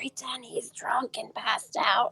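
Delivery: hushed whisper. Speaking in character to another player's character during a scene: whispering. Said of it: "I'm gonna whisper to Adriana".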